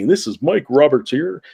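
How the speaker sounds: radio announcer voice, on-air delivery. Showing how to introduce yourself, in a radio announcer voice. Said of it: "get get the radio voice going".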